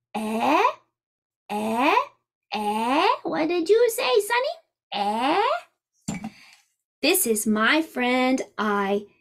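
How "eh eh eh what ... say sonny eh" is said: raised pitch with a swoop on each "eh". Introducing letter friends, speaking as the one who can't hear well: Old Man E voice. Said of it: "Old Man E can't hear very well".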